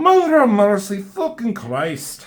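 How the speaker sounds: very high-pitched, swooping attempted Irish accent. Retelling a comic character's line again, trying an irish accent. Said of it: "Is that more, um, Irish?".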